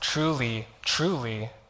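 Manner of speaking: slow, deliberate reading, word by word.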